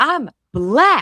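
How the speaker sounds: put-on yelling. Retelling a character's phone reply, imitating a shouted line. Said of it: "All caps, no cap, but caps".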